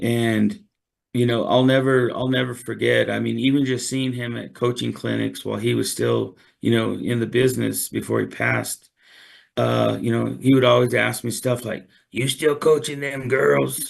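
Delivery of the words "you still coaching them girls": put-on gruff little voice. Retelling what an old coach always asked: gruff voice imitating Coach Bradley. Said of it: "in his little gruff voice".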